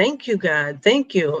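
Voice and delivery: sobbing, tearful crying voice. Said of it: "And I just started crying".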